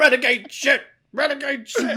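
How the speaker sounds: put-on New York accent spoken at a very high pitch. Imitating a wrestler saying his catchphrase: imitating Taz's New York accent. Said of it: "in his, like, New York accent".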